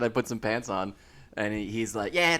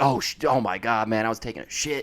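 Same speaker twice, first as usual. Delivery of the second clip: mock panicked outburst, male voice. Retelling a man coming out to claim his lost baby, imitating him freaking out. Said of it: "he's like freaking out".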